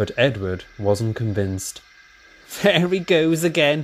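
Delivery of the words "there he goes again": teasing, ribbing, higher pitched. Narrator reads the engine James remarking on Henry, teasing. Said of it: "teased James".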